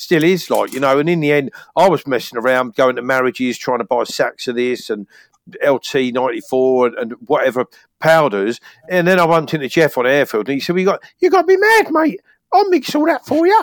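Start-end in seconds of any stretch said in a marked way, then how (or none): 10.8-13.6 put-on squeaky voice, much higher. Retelling what the man he bought powders from said, imitating Jeff's squeaky voice. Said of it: "His little squeaky voice".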